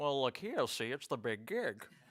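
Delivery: put-on old-timey showbiz talent-agent patter. Joking after being told they sound like an old-timey agent: put-on old-timey agent voice. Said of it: "You sound like an old-timey agent".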